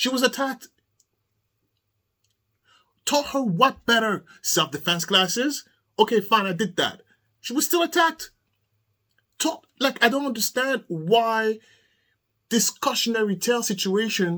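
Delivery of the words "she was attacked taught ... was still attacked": heated, fired-up voice, right on the edge of shouting. Ranting about people telling a parent they should have taught their attacked daughter better; heated, close to yelling. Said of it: "I'm about to yell at you".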